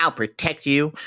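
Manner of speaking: silly, goofy put-on toy doll voice. Describing a talking voodoo doll and quoting its line in a goofy doll voice. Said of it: "It's just a goofy voice".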